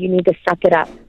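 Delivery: mock-stern, severe voice. Recounting testimony, quoting the judge who stood up, retelling a judge's stern voice. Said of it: "in a very stern voice".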